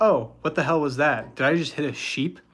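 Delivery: normal talking voice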